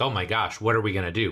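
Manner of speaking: ordinary delivery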